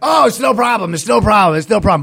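put-on high scream, as hard as possible. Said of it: "But he's screaming at the top of his lungs".

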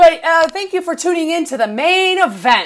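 loud, high, mock condescending announcer voice.

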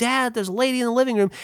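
high-pitched screaming. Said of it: "And so I screamed".

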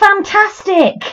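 very high, shrill shouted call. Retelling what initiates had to shout around the village: imitating a cult member shouting. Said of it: "shouting things like".

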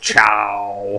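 put-on drawling voice. Saying goodbye after being asked for a Troy Baker voice. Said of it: "Now to say it in Troy Baker's voice".

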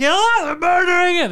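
mock panicked shout. Retelling a man's reaction on seeing the prank photos, imitating a panicked cry. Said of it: "He started seeing the photos and he panicked".

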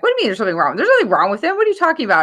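indignant, offended, high, rushed, swooping protest. Recalling being asked if something was wrong with their son, retelling being offended. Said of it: "And I was all offended".

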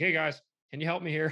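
ordinary talk

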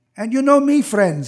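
put-on very heavy, thick, laid-on Russian accent. The speaker quotes a storyteller who included them in his story: heavy Russian accent. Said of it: "he said in his very heavy Russian accent".

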